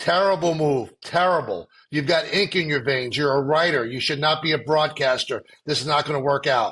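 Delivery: dry, flat, expressionless deadpan delivery. Retelling what a colleague said at a urinal: imitating Greg's deadpan manner. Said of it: "just looked at me in Greg's deadpan manner".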